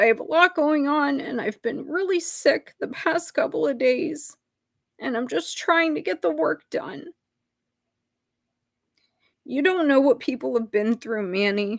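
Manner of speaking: high-pitched voice welling up with emotion. Confronting Manny about how they talk to people, getting emotional. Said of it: "I'm sorry that I'm getting emotional".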